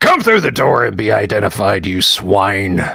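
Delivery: hostile orc character voice, calling out loudly. Narrating the scene, the speaker voices the orc calling out: orc voice. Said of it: "the orc voice calls out".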